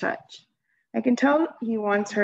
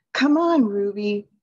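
close to pleading, slower pace; 3 dB louder than usual. Narrator reads a man tugging a stubborn elephant's chain, almost pleading. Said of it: "Mac is almost pleading".

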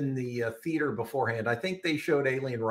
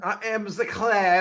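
put-on French accent, loud, slow and drawn out; 9 semitones higher, 6 dB louder than usual. Podcast host opening an episode with a co-host, in a put-on French accent. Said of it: "Why are we speaking in a French accent?".

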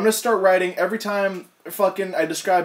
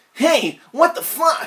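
bright, high, put-on cartoon hero voice; 8 semitones higher than usual. Reading a line out in a put-on Sonic voice. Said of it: "I'm going to do my legit Sonic voice now".

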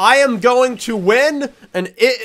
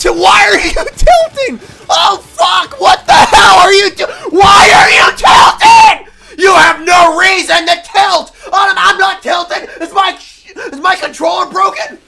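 genuinely angry, much higher and louder; 10 semitones higher, 5 dB louder than usual. Playing a game whose camera keeps tilting on its own, genuinely angry. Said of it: "This is genuine anger".

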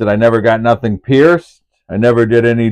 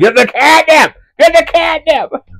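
put-on very high screaming, pitch climbing. Retelling a story about the cat and catnip: imitating dad screaming. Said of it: "my dad's screaming at me".

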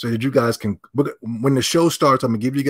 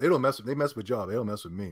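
ordinary talk

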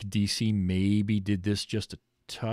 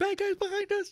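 mock scared voice, very high-pitched. Retelling a scene the speaker loved, acting out scared. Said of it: "He's all scared".

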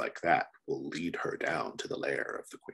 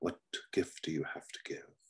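put-on old man voice, quieter; 6 dB quieter than usual. Voicing an old bearded elder who greets an outsider making an offering: old man elder voice. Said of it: "The elder, an old man with a beard".

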